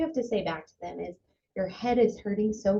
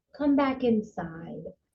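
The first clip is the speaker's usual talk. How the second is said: calm, gentle, soothing, soft-spoken tone. Demonstrating how to call back someone eloping outside: calm soft voice. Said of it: "really offering a calm voice".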